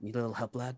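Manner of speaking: soft side-of-the-mouth stage half-whisper. Voicing a character leaning in beside a player: side half-whisper. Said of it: "side whisper".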